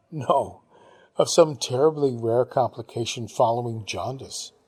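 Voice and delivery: ordinary delivery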